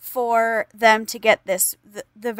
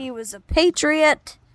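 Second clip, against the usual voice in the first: mock-sincere, sarcastic, tongue-in-cheek, pitched up; 5 semitones higher than usual. Praising a general's motives to the others: sarcastic. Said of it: "I feel like y'all are being sarcastic".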